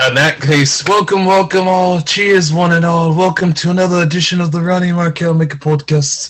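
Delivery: phony put-on British accent. Welcoming the podcast listeners as a joke, put-on british accent. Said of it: "we're only doing it 'cause we love the British accent".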